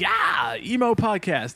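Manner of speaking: high-pitched, screamed rock-show yell. Describing how the podcast intro usually starts: imitating own usual screaming. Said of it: "I'm, like, screaming, like".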